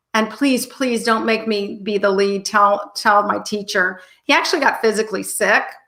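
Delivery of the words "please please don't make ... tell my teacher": put-on desperate pleading. Retelling how a boy pleaded with his parents: pleading imitation. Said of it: "he pleaded with his parents".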